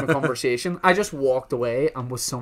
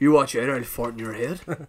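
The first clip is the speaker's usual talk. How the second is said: menacing, threatening paramilitary-style voice. Teasing the other host by replaying their line as a mock paramilitary threat. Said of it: "You also said it like a paramilitary threat".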